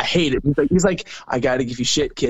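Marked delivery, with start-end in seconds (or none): none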